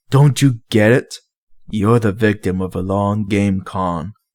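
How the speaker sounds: growling to sound tough. Stalling the cultists in the doorway, detective Shepard taunts them, growling to sound tough. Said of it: ""Detective, / [name] coughed, hoping the growl in his voice made him sound tougher than he felt. / [name] coughed, / hoping the growl in his voice made him sound tougher than he felt. / Even though ev".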